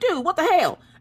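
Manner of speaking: mock panicked, alarmed, very high freaked-out outburst. Retelling own reaction to a partner's news of an ultimatum: retelling own freak-out. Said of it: "So I'm freaking out and I'm like".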